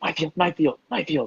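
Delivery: put-on high, childlike voices of several children. Voicing child figures echoing the guardian's words: voicing child figures. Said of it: "the child figures kinda repeat".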